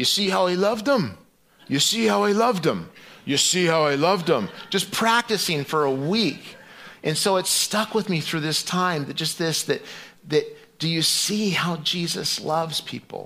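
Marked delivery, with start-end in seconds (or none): 0.0-4.5 put-on Connecticut-accented speech. Recall Bill practicing his verse for a week, imitating Bill's Connecticut East Coast accent. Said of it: "practicing his line in this Connecticut East Coast accent".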